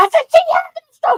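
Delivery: acted, shrill, very high screaming. Retelling reading rising blood pressure numbers: retelling screaming at staff. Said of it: "I started screaming".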